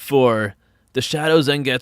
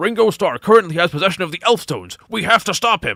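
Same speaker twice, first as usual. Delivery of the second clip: high, pitched-up voice like a video-game guard; 5 semitones higher than usual. Reading a message aloud in a game guard's voice: Sonic Adventure 2 guard voice. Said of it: "I read it in, like, that voice".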